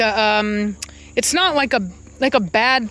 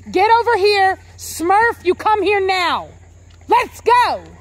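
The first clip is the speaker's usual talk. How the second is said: very high, slow, stern, firm voice; 10 semitones higher than usual. Calling the dogs over: firm commanding voice. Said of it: "Gotta say it like you mean it".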